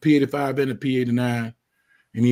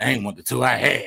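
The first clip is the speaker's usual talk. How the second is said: put-on scornful, contemptuous, disdainful, dismissive delivery. Retelling a friend's remark for the chat: imitating Tank's disdain. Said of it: "He said that with disdain".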